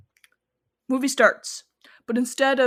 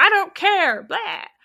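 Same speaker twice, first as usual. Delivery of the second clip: high, loud, aggressive cop voice. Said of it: "super aggressive as a cop".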